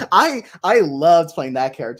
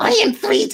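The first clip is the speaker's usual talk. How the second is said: disgustingly grating, ugly, scraping goblin voice. Showing the voice of the disgusting goblin role: disgustingly grating goblin voice. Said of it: "I hit it just now".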